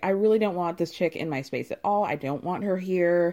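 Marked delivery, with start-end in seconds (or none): none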